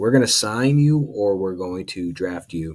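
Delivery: plain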